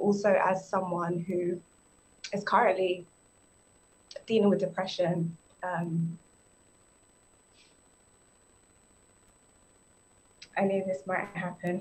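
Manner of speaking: emotional, choked up, near tears. Sharing about living with depression, emotional and near tears. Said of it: "It's okay, sis, we got you".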